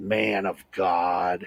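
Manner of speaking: real evil voice with the word god stretched out. Retelling what she said to him, the speaker uses a mock evil voice. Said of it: "with this real evil voice".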